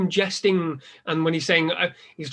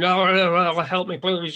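very slow broken-jaw voice, drawn-out oh. Discussing a film, the speaker mimics Warwick's flopping jaw: imitating Warwick with broken jaw. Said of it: "like he's broke his jaw and he's going".

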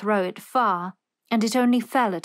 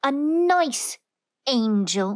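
fierce, scornful, ferocious sneer, drawn out; 3 semitones higher than usual. One character answers another in an argument, ferocious sneer. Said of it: "Colin sneered ferociously".

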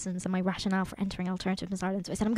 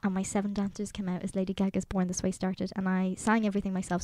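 usual speaking voice

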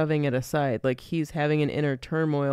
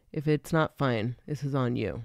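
put-on whisper; 2 semitones lower than usual. Retelling a film scene where the dad whispers to the mom: imitating a whisper. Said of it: "And then whispers to her".

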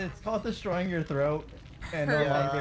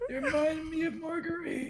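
put-on old man voice, much higher pitch; 13 semitones higher than usual. In a game, answering Sally after she praises him, in an old man voice. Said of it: "He's sounding like an old man".

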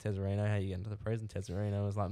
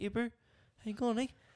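big man's voice, put-on and surprisingly very high; 14 semitones higher than usual. Describing large men with surprisingly high voices; imitating a high-pitched voice. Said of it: "their voices are so, like, beautifully high".

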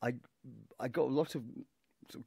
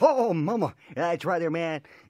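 loud, high, belted cartoon character voice; 6 semitones higher, 12 dB louder than usual. Voice actor demonstrating a cartoon character from their work, Johnny Bravo voice. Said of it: "I am the voice of people like Johnny Bravo".

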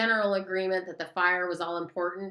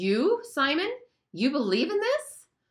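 astonished, amazed, high swooping rising tone; 7 semitones higher than usual. Ralph stands up in the assembly and questions simon, amazed. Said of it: "Ralph stood up in amazement".

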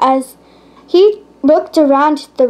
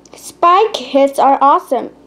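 ordinary delivery, nothing marked

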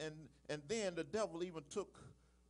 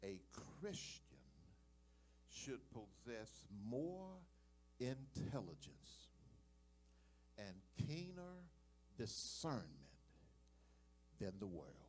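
very slow, halting, hushed, word-by-word near-whisper; 6 semitones lower, 11 dB quieter than usual. Repeating a point so listeners can write it down, very slow. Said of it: "I'm going to say it slow so you can write this down".

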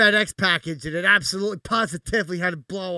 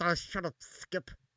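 breathy, hushed, slow New Jersey mobster drawl; 12 dB quieter than usual. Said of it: "And then he comes over and goes".

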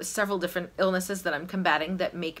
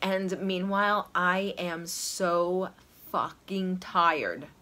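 usual speaking voice

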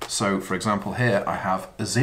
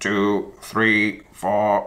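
very slow, monotone robotic voice. Demonstrating a dice counting game for children, counting aloud in a robot voice. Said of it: "use your best robot voice".

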